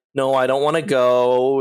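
plain

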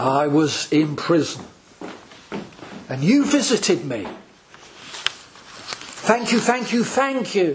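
slow reading with long pauses. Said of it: "let me read it slowly".

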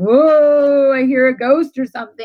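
mocking, needling sarcasm with drawn-out "whoa". Retelling a husband making fun during labor: imitating sarcastic mocking. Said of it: "making fun of me as he usually does in his sarcasm".

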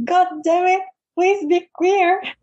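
high, exasperated, acted-out frustrated near-scream. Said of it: "almost, like, screaming at myself".

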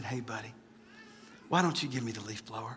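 mock hushed, very soft, courteous voice. Retelling words to a son at the yard: imitating a polite request. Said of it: "very politely".

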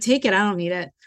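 put-on indifferent, uncaring tone. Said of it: "And my tone was like".

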